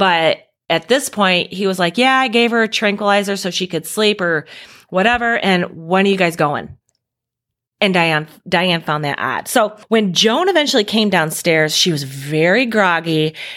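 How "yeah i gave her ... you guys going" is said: ordinary talk, nothing marked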